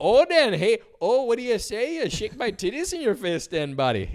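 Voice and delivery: really thick put-on Minnesota accent, high and loud. Acting out the hottest girl from a small town, in a really thick Minnesota accent. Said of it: "really thick Minnesota accents".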